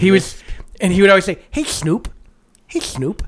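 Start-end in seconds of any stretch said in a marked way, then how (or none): 1.5-3.2 put-on cartoon-mouse voice, much quieter. Recalling an old cartoon detective duo, quoting the mouse's line, Blabber Mouse voice. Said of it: "he talked with like this".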